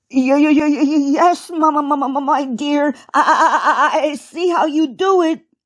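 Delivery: stammering, stuttering delivery. Narrator reads Uncle Wiggily answering Baby Bunty, stammering. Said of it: "stammered Uncle Wiggily".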